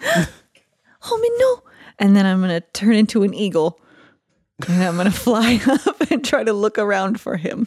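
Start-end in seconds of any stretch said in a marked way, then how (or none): 0.1-1.6 acted high, tearful crying, sobbing the words. A tabletop player whose character sees their brother vanish, crying in character.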